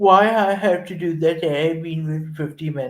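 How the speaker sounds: put-on British accent in a whiny woman's voice. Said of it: "in a British accent".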